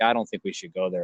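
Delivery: low, soft, quick undertone. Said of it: "I'm speaking, like, really, really low where ... this idiot couldn't hear me".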